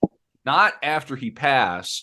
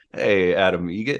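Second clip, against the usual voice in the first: slow, deliberate, easy-paced, unhurried delivery; 5 semitones lower than usual. Attempting a Norm Macdonald impression while recalling a joke: Norm Macdonald impression. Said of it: "I don't know if I could do a Norm".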